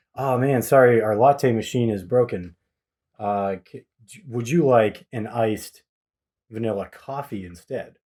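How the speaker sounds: usual speaking voice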